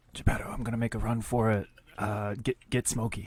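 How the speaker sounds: soft, half-whispered stage-whisper aside. Voicing a character telling a companion he'll run for it: half-whispering in character. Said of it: "he whispers to Geppetto".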